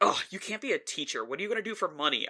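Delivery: high, mock-cross, angry, disapproving tone. Retelling the mother's reaction to a switched major: imitating an angry mother. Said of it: "that was the most angry my mother was".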